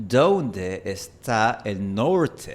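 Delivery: very slow American accent speaking Spanish. Demonstrating how to imitate a gringo accent in spanish, gringo accent. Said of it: "si yo quisiera imitar un acento gringo, yo diría".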